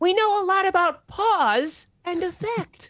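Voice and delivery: very high-pitched character voice. Telling a joke after being asked for the character voice: Bubsy voice. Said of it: "Can you tell a joke in the Bubsy voice".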